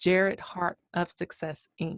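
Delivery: slow, deliberate, carefully enunciated delivery. An interviewer repeats an organization's name so listeners understand, with slow, clear enunciation. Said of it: "I want to make sure people understand".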